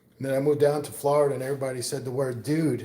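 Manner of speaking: ordinary talk, nothing marked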